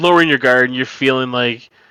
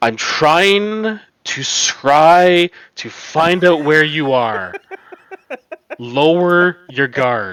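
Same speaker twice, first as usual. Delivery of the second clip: exasperated, fed-up elvish voice; 3 semitones higher than usual. Narrator voicing a familiar elf speaking inside the player's head: exasperated elvish voice. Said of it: "Just sounds so exasperated".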